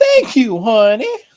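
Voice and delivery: put-on high-pitched elderly woman voice. Announcing a bit, then doing a grateful old lady impression. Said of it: "I'm going to do the old lady".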